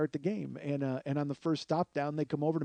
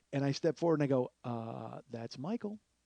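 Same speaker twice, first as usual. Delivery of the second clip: usual speaking voice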